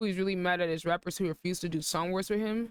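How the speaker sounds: plain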